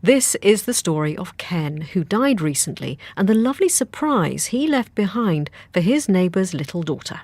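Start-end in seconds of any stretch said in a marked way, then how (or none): none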